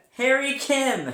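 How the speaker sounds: very loud, high, emphatic declaration with conviction. Showing another speaker how to say the name, with conviction. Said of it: "Say it like you mean it".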